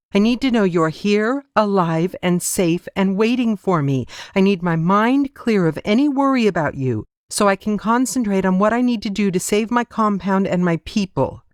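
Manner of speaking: firm, high, insistent voice, arguing straight back. A man refuses to let the woman come along with him; arguing back. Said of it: "When the battle lord strode into the hall to give them their orders, / He took a deep breath and turned to face his men. / When the battle lord strode into the hall to give them their orders".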